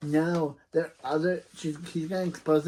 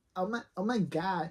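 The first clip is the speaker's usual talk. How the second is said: put-on voice of a teenage girl; 3 semitones higher, 5 dB quieter than usual. Voicing a teenager episode, doing a put-on teenage girl voice. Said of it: "I have to do a teenager's voice. A teenager's girl voice".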